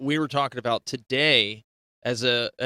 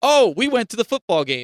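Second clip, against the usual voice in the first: projected voice, much higher and louder; 9 semitones higher, 7 dB louder than usual. Showing a student how to speak to a room, projecting the voice. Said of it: "see how I'm projecting my voice?".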